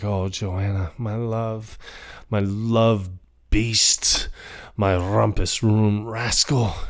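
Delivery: slow, unhurried, savoring talk to himself, lingering on words. Retelling a character talking to himself on the staircase: imitating Charlie. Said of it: "he's talking to himself, he's like".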